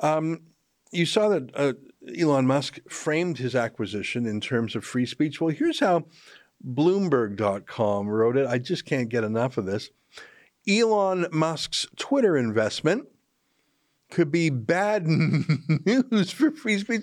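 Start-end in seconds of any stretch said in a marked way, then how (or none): 10.7-17.0 laughing through reading aloud, pitched up. Reading a news headline aloud: laughing while reading. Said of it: "I couldn't read that without laughing".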